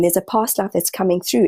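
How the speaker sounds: ordinary delivery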